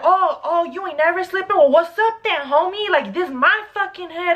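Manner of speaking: mock high-pitched, angry flip-out. Retelling how a guy flipped out on them: imitating a guy flipping out. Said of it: "he just went crazy".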